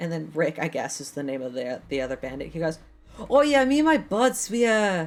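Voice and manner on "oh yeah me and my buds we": put-on Canadian accent, higher and louder. Voicing a bandit asked about cool bars: Canadian accent. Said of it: "why is he Canadian now?".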